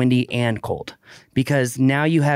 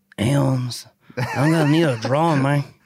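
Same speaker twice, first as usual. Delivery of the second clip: imitated New Mexican accent. Joking about a drone client: imitating a New Mexican accent. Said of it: "better than a New Mexican accent".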